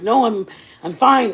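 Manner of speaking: put-on breathless speech, gasping for air. Retelling someone's reply while deciding whether to call 911: imitating someone gasping for air. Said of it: "But he's gasping for air".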